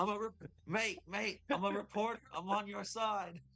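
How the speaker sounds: put-on Australian reporter creature character voice. Voicing a reporter cockroach approaching the party: Australian cockroach reporter voice. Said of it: "kind of oversized Australian".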